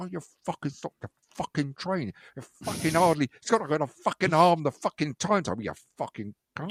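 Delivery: put-on muttering, mumbled to oneself. Retelling waiting on a platform as trains pass by: imitating mumbling to oneself. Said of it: "I'm standing mumbling to myself".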